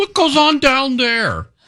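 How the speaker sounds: very high-pitched way of talking. Retelling the other speaker's words from an elevator chat: imitating the other speaker's voice. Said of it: "The fact that you think I talk like that".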